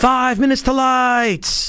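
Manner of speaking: high, slow, drawn-out screaming yell.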